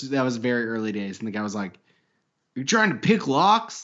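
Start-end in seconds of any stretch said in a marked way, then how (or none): 2.5-3.8 angry, accusing tone, pitched up. Retelling a prank call to a locksmith, imitating a mad locksmith. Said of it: "Like all mad".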